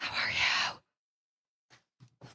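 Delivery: whispered voice. Greeting Darren while keeping quiet for twenty more seconds: whispering. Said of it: "I'm whispering for twenty more seconds".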